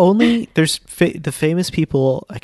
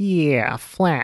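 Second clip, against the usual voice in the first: put-on Michigan accent, higher; 3 semitones higher than usual. Showing what a Michigan accent sounds like: bad put-on Michigan accent. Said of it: "Michigan accent is very".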